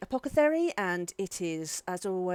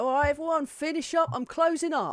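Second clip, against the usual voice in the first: high-pitched shouted voice; 7 semitones higher, 4 dB louder than usual. Describing the man calling out behind you as you leave, retelling his shout from behind. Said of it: "you can just hear him shout out behind you".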